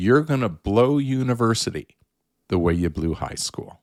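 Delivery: brutal, angry, harsh scolding. Retelling his father's words when he was returning to school, imitating someone angry. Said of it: "He he was angry with me".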